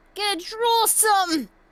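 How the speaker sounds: put-on New Jersey accent, high-pitched. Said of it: "an accent".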